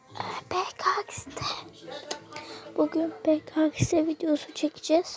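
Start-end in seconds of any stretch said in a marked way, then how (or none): 0.2-1.5 hushed, quiet whisper. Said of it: "Ben biraz sessiz konuşuyorum".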